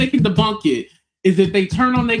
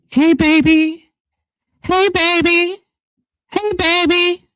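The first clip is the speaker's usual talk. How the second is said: dramatic, pitched-up calling out; 8 semitones higher than usual. Acting out how the woman talked on FaceTime in the dark: imitating the woman on FaceTime. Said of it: "She be like this in the dark".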